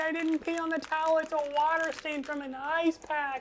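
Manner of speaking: mock screaming. Retelling an online argument, imitating the kid: imitating someone screaming. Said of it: "the kid starts, like, screaming".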